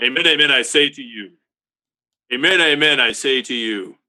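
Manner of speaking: robotic, transforming-robot-like voice. Trying the Jesus voice again after being told it sounded like Satan: Jesus voice like a transformer. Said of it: "like a transformer".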